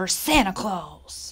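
snarling, ground-out delivery. Bradley answers his father, snarling. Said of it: "snarled Bradley".

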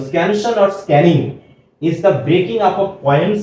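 slow, deliberate read-aloud English delivery.

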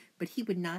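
ordinary delivery

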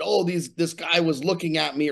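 ordinary delivery

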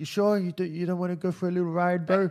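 put-on New Zealand accent. Retelling a man asking for directions and offering a ride, in a Kiwi accent. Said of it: "I don't know why he's got a Kiwi accent".

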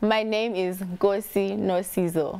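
slow, careful, clear spelling out of a name.

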